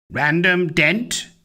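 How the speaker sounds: classic mechanical robot voice, no personality. A robot stops in front of a woman and asks her name; robotic voice. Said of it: "it asked in a real robotic voice".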